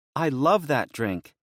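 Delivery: high, bubbly, effervescent, gushing voice. Reading a woman's reply when offered a caffeinated drink in the car, bubbly voice. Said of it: "Lydia stated in a bubbly voice".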